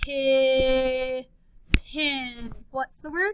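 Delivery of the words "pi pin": stretched, held, blended sounds, louder. Showing learners how to blend letter sounds: blending sounds, voice held on. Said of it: "Now blend".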